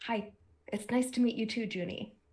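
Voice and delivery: leaned-in, secretive, confiding stage whisper. Voicing a character leaning in to greet a bonsai plant: half-whispering to a plant. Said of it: "leans in as if to, to whisper to the bonsai plant".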